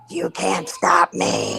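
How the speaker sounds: low, deep, creaky and rough demon voice. Retelling what two-year-old Logan said, in Logan's deep demonic voice. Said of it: "this deep voice".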